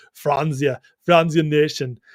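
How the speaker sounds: German-accented speech.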